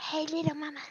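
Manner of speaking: whispering godlike voice. The game master voices a god speaking into a resting player's mind, godly whisper. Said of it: "a godly voice whispering in the back of your mind".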